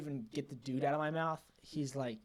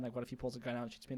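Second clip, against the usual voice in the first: ordinary delivery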